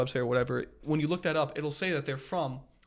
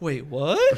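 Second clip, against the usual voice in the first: serious, earnest, genuine tone; 5 dB louder than usual. Imitating how a friend asks a serious question with a head tilt: imitating a serious question. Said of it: "when you ask a serious question".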